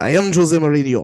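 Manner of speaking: very loud, booming, full-chested voice. Trying out an impression of a football manager: Jose Mourinho impression. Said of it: "I'm gonna try to do his impression".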